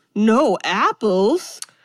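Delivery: put-on stunned disbelief, as shocked as can be. Retelling a film scene where a visitor learns there are no apples: imitating a shocked question. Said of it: "In the most shocked way you possibly can".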